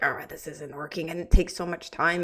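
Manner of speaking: put-on cranky, frustrated grumbling. Retelling own mood while crunching numbers: imitating own cranky frustration. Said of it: "I was in that cranky spot".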